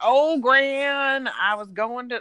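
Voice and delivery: loud, high, thick Southern drawl, one word stretched. Imitating a man talking to his grandma on the phone, heavy southern accent. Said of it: "he would get this really heavy southern accent".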